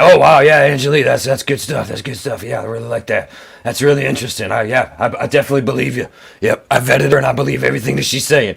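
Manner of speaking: low, rough, raspy talk-show host voice. Mocking an interviewer's fawning reaction to a guest: raspy Jimmy Church impression. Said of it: "Jimmy's raspy fucking voice".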